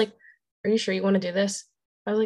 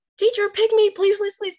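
very high, loud, pleading screaming; 12 semitones higher, 5 dB louder than usual. Retelling a pep rally, the speaker acts out screaming to the teacher; retelling a scream. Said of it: "So I'm screaming".

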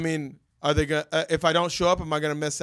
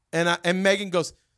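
ordinary talk, nothing marked

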